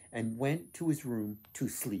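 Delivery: ordinary delivery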